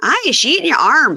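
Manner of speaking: put-on very high-pitched, loud Irish accent, jumped into. Retelling what a cousin said on walking into the spare bedroom, imitating Siobhan's Irish accent. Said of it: "my jump off to an Irish accent".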